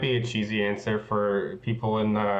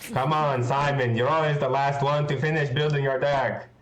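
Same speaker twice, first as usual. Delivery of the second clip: high, thick, full put-on Italian accent; 5 semitones higher than usual. Act out Andrea walking up to Simon, who just finished a draft deck, in Andrea's full Italian accent. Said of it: "in like full like Mengu Italian accent goes like".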